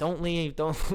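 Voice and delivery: put-on scared, pleading voice. Retelling a partner begging not to leave: imitating someone scared and pleading. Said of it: "she was so, like, scared".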